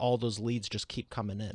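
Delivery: ordinary talk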